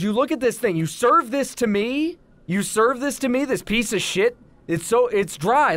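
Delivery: mock indignant ranting. Retelling a restaurant complaint, acting out a customer furiously confronting the person who served a dry sandwich. Imitating an angry customer. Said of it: "just please calm down".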